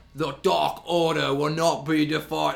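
very slow, rough, drawn-out orc voice. Retelling what a wrestler said at the event: imitating Alex Reynolds sounding like an orc. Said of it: "He sounds like an orc".

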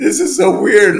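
high, loud giggly talk. Recalling a flight while answering a question: laughing like a kid. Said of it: "I'm laughing like a kid".

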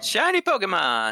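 marked, striking inflection on "Shiny Pokemon". Announcing the day's topic when asked: striking inflection. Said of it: "the inflection really got me".

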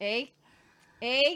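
put-on Canadian accent with "eh". Showing how saying the one word makes you canadian: canadian "eh". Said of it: "You just say A and you're Canadian".

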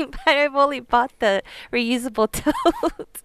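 laughing through words, high and swooping. Admitting to another speaker what was bought, laughing while talking. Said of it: "I'm sorry, I'm laughing".

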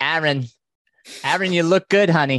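put-on fond, high, loud Brooklyn accent. Speaker quotes his mother at his longest ultra race, brooklyn accent. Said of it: "she's got the Brooklyn accent".

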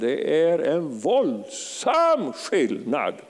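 våldsam stressed, drawn out slow and weighty. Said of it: "jag säger det igen".

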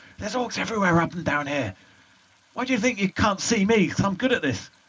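whispering urgently. With orcs everywhere, he keeps his voice at an urgent whisper. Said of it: "keeping his voice at like an urgent whisper".

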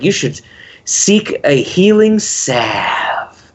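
very slow, dragged-out, drawn-out delivery. Quoting a line from a movie's introduction: imitating a slow voice. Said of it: "he starts talking in a slow voice".

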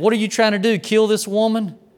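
mock accusing cry, yelled high and accusing. Retelling how a man from the congregation confronted the preacher: imitating someone yelling. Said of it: "He's yelling at the preacher".

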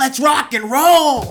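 very high-pitched, very loud, belted-out yell. Introducing the first guest, Bridget, as Kenny from the movie: Kenny impression. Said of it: "my attempt of doing Kenny from the movie".

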